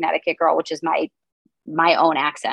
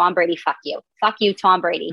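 put-on Boston accent. An actor shows the phrase used to drop into a Boston accent. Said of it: "when I have to be Boston".

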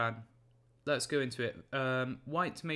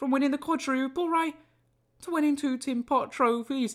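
mocking, put-on Scouse accent, very high-pitched; 11 semitones higher, 6 dB louder than usual. A Man United fan taunting Liverpool fans in a mocking Scouse accent. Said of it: "this is my Scouse accent".

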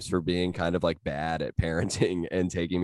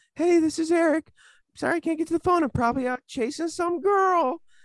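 put-on tiny squeaky kid voice, very high; 3 dB louder than usual. Recreating his very first voicemail greeting in a super high little voice. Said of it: "I had like a super high little voice too".

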